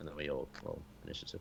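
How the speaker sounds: plain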